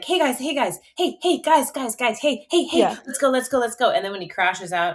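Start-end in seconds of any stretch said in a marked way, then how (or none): 0.0-3.9 put-on overeager dog voice, pitched up. Answering what the dogs' inner voices sound like: imitating dog's inner voice, excited. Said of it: "their internal voices sound like".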